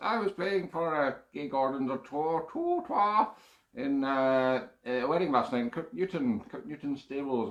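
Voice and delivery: put-on professorial character voice. A host talks to listeners, switching into a Professor Yaffle voice. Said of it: "forgot my Professor Yaffle voice".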